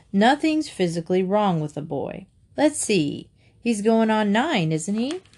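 plain reading voice

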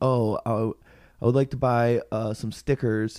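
ordinary talk, nothing marked

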